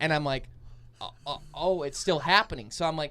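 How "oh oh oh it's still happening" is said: normal talking voice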